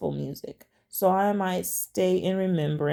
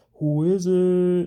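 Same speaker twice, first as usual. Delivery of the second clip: loud, over-the-top, put-on masculine voice; 5 dB louder than usual. Retelling answering a knock at the door: imitating own most masculine voice. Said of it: "I said in the most masculine voice possible".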